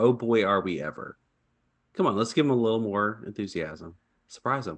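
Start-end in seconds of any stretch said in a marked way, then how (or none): 0.0-1.2 mock insincere flat tone, much slower. A co-host mimics the other host's greeting: mock-insincere flat delivery. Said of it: "That did not sound very sincere".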